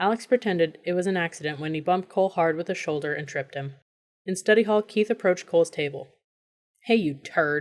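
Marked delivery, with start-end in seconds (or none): 6.8-7.6 slow growl muttered under the breath. Narrator reads Keith approaching Cole's table in study hall; growled under his breath. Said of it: "he growled under his breath".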